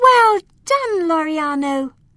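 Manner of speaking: triumphant cry. Reading a story aloud, giving Alma's words to Loriano in a triumphant voice. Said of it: "Alma said in a triumphant voice".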